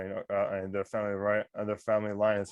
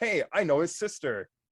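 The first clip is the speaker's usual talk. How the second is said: bright, chirpy, cheery, higher-pitched voice; 8 semitones higher than usual. A player's character turns to address a lady: cheery voice. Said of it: "like all in like a cheery voice".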